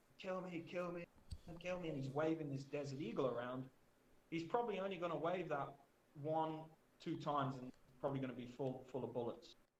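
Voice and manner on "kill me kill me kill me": acted, desperate, frantic pleading, half-voiced, repeated, mild. Describing an armed man in the street, imitating a man screaming. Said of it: "he's screaming and shouting, like".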